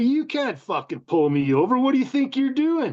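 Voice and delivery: put-on cocky tone. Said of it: "I was a cocky young fucking biker".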